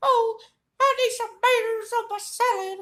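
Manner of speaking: cartoon mouse voice with a Kentucky accent. Doing voices in a video, imagining him from Kentucky: Mickey with a Kentucky accent. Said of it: "If Mickey was from Kentucky, he'd sound like".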